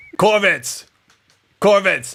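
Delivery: full-volume high shout. In a role-play game, a character calls out for Corvitz, yelling. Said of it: "I'm yelling".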